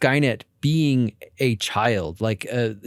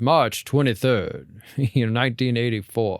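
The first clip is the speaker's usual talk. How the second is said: ridiculously flat, deadpan monotone voice. Retelling how the cop in the original answers with a gun to his face: ridiculously monotone voice. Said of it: "in just like this ridiculously monotone voice".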